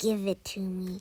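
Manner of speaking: growling goblin voice, grabbing. A goblin lunges for a magic kitten just snatched from its reach, growling goblin voice. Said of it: "the goblin growled".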